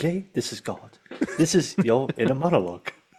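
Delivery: put-on whisper. Describing what he wants to whisper to Jay, the speaker is whispering as God. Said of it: "I want to whisper to Jay".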